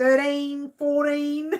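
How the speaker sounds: loud Australian accent with the t sound dropped. Counting aloud after a comment about the accent: Aussie way with no T. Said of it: "That's the real Aussie way".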